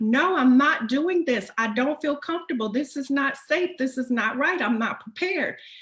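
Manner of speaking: put-on shouting. Retelling an argument with a man, the speaker reenacts her own shouting. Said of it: "we were like shouting at each other".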